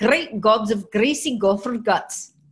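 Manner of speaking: loud, put-on Scottish accent laid on for show. After others discuss a bad accent, showing off a scottish accent. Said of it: "I can do the Scottish".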